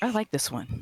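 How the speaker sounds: whispered line. Voicing a character who turns and whispers to another: whispering in character. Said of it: "turn and whisper to Nesha".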